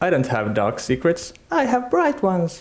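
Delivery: character voice, swooping pitch, rattled off quickly. Taking a turn at Lux impressions: Lux impression. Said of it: "do you have a Lux impression on hand?".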